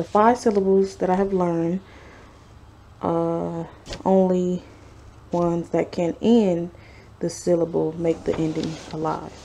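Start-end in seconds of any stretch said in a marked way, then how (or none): none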